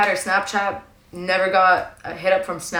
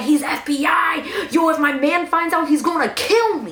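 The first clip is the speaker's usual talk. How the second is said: mock panicked scream, higher pitch; 8 semitones higher than usual. Retelling a friend panicking after her phone was taken: imitating someone screaming. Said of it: "And she's screaming".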